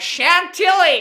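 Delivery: put-on shrill, loud, high, thick Southern American accent. Retelling what a woman said, in a Southern American accent. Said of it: "in the most Southern American accent".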